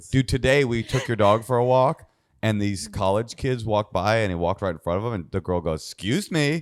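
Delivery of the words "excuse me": acted, a little sassy, put-out, pitched-up tone. Retelling what a girl said during a dog walk: imitating a bit of attitude. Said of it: "kinda with a little bit of an attitude".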